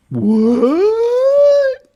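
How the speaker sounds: very loud, very high, drawn-out sarcastic "what". Reacting to news of planned studio layoffs: sarcastic. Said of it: "That's my sarcastic response to that".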